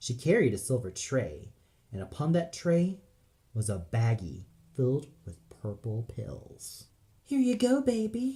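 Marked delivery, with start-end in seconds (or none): 7.3-8.4 piping, squeaky, very high voice. A woman hands a gnome a tray of pills, in a high, squeaky voice. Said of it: "in a high, squeaky voice".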